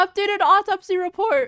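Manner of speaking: very high, very loud cracking voice. After five hours, speaker announces an updated autopsy report, voice cracking. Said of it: "my voice cracked".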